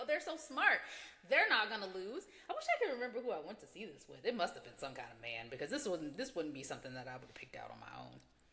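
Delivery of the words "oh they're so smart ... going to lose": ordinary talk, nothing marked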